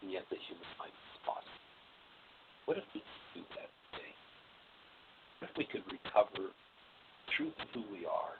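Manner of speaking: fading away. Speaking to others over a phone microphone, voice getting quieter and quieter. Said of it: "your voice just got quieter and quieter".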